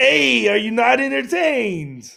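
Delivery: loud, rasping, creaky, high-pitched belted call. After quoting the words plainly, announce and deliver them again as a Marcus Aurelius impression. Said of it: "in the great impression of Marcus Aurelius".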